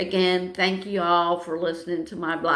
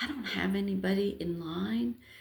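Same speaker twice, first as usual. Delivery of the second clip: secretive, confiding, soft, hushed half-whisper; 2 semitones higher, 8 dB quieter than usual. Retelling a helper's offer to change the battery: imitating someone half-whispering. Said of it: "she starts whispering".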